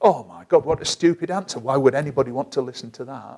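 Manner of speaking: cutting, harsh, self-critical tone. Demonstrating self-talk about a stupid answer, really critical tone. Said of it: "in a really critical voice tone".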